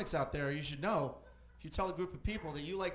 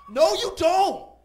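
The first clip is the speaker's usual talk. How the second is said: put-on screaming man voice, higher and louder; 17 dB louder than usual. Retelling a man overheard on his cell phone: imitating a man screaming. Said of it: "He was screaming".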